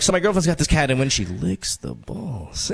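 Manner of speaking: slow, drawn-out, relishing, savoring delivery. Mimicking how Vin told the story: imitating Vin's slow delivery with gusto. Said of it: "you slow down. You're like".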